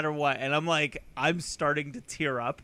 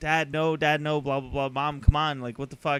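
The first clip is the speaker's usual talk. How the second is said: plain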